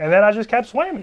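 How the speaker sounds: put-on high country twang. Retelling what a man said in an interview, imitating a country twang. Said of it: "he's got a country twang".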